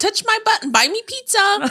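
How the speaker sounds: mocking, very high-pitched pick-me girl voice. Acting out what a pick-me girl says: put-on pick-me girl voice. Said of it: "We say it in that voice though".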